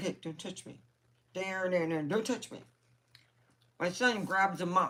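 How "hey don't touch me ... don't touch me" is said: put-on talking chicken voice. Telling how the pet chicken reacts to being touched: voicing George the chicken. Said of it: "He's like".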